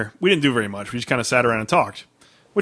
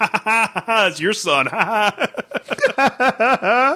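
mock very high, drawn-out teasing laughter; 10 semitones higher than usual. Retelling a best friend pointing and laughing at someone: imitating someone laughing. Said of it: "pointing at her and just laughing".

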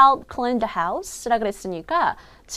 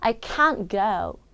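strong stress on can't, go reduced and shortened; 4 semitones lower, 3 dB quieter than usual. English pronunciation lesson on negative sentences: stress on can't, go reduced. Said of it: "can't 요 부분을 크게 읽고요. 뒤에 있는 동사는 조금 줄이는".

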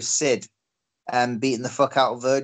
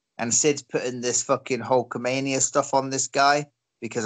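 usual speaking voice

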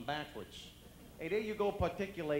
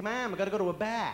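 put-on loud Boston accent, laid out plainly; 3 semitones higher, 8 dB louder than usual. Retelling how people from Boston invited the speaker to a bar, in a Boston accent. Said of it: "they talk like that".

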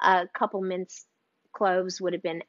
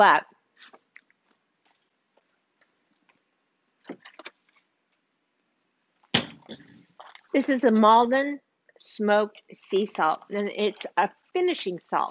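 speaking through a full mouth. Tasting a dish while presenting a sea salt, talking with mouth full. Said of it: "As I talk with my mouth full".

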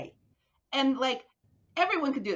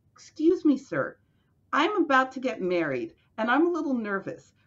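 put-on polite young woman's private, confiding aside. Retelling a young woman's request to an x-ray man: imitating someone speaking very softly. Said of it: "spoke to him very softly on the side and said".

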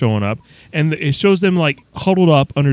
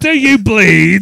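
put-on loud, raised, higher-pitched British accent; 5 semitones higher, 6 dB louder than usual. Mocking a film scene, the speaker quotes Superman: Superman with British accent. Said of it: "he's speaking with a British accent".

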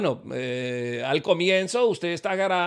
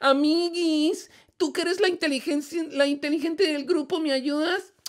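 put-on young girlish voice. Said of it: "una compañera le dice".

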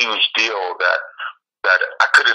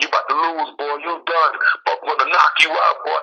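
mock heckling screams and shouts, higher; 6 semitones higher than usual. Retelling people screaming during the walk out to the cage: imitating people screaming. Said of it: "screaming at me".

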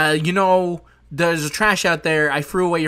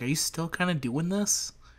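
put-on mutter under the breath, much quieter; 9 dB quieter than usual. Describing an old robot rival's remark, retelling an under-breath mutter. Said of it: "he's kind of under his breath".

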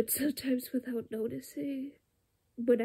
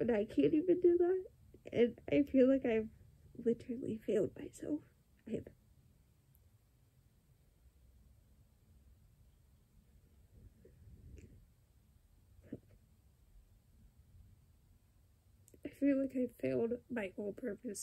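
tearful, crying voice, speaking through tears. Sharing something they feel strongly about, crying. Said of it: "I don't know why I'm crying so much about this subject".

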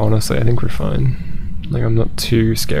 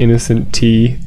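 ordinary talk

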